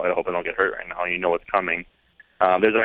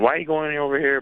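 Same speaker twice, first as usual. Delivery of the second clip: high-pitched, demanding yelling; 8 semitones higher than usual. Recalling how the other person yelled at you, retell the yell. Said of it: "just yelling at me".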